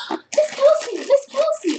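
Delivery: put-on loud high childlike yell.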